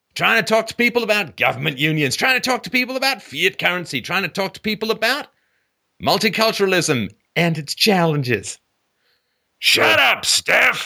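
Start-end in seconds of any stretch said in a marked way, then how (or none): 9.6-10.9 angry yell, rough and creaky. Doing an impression of boomers reacting to philosophy talk: imitating boomers yelling shut up. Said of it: "that was being yelled at them".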